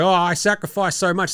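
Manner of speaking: scornful, sneering put-on voice. Mocking a player who claims he sacrificed: imitating Karl-Anthony Towns. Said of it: "And Karl Anthony Towns going".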